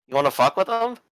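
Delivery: taunting tone, high pitch.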